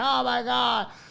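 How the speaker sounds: put-on overwrought, high crying outburst, in tears. Retelling crying after a dog bite: imitating own crying.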